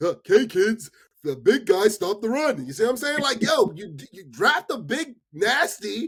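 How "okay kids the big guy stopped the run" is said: put-on children's show presenter voice. Explaining football simply, mocking himself: Barney and Friends voice. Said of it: "like Barney and Friends".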